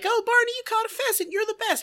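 put-on very high, gushing, excited children's cheering voices. Recapping an episode's ending, imitating a bunch of kids. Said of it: "all the kids are like".

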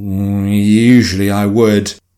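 hesitating, unsure start, "usually" drawn out. Nana replies to Mummy's suggestion, hesitant. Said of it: "Nana said hesitantly".

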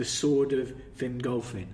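ordinary delivery

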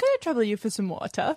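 mock old-fashioned child voice. Retelling a friend ordering drinks at a bar: Oliver Twist voice. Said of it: "order a drink as if she were Oliver Twist".

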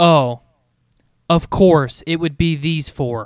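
acted-out smug, self-satisfied, superior, knowing tone. Reading a comic character's line aloud the way they imagined it: smug. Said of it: "I almost read it like smug".

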